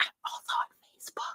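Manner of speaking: hushed, soft, breathy whisper. Telling viewers where to find them online, whispering. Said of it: "I feel I have to whisper that".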